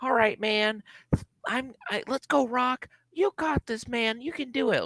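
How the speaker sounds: put-on very high, chipper, happy, upbeat encouraging voice. Retelling the original plan for the promo: imitating Cody, happy upbeat and chipper. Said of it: "he was supposed to be all happy and upbeat and chipper".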